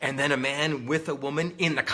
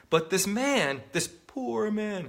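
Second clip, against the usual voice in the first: put-on sarcastic pity, slow and swooping; 6 semitones higher than usual. Quoting a man's example with put-on pity: sarcastic quoting. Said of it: "sorry for the sarcasm".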